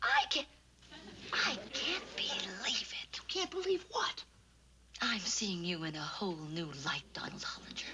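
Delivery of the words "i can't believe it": hushed whisper, much higher-pitched. A character in a scripted scene, whispering.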